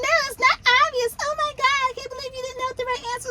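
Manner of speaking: high, rushed mock little-kid baby voice.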